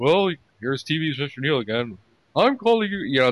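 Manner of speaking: goofy, dopey put-on voice. Mimicking how they read his emails on the show, dopey put-on voice. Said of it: "Read it in the dopey voice like they always do".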